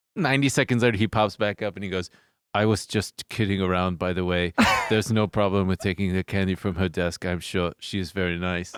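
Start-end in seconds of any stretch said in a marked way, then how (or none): 2.6-8.8 low, flat, level deadpan monotone. Retelling what he said after popping back up behind his monitor, flat monotone. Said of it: "They're very monotone".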